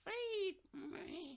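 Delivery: very soft, very high, broken mechanical croak. Reading a story about a burnt toy still calling out: broken mechanical croak. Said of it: "croaking out in a broken mechanical voice".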